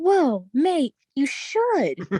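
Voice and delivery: slow, lingering, swooping delivery. Retelling how a friend reacted to reading a story: imitating Martin's exclamation. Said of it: "That's literally how he said it".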